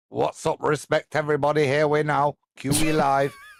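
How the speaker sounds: bad, fake London street-slang accent. Proposing a youth-appealing show opener, bad london street accent. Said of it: "That's my bad impression of what somebody from London would sound like".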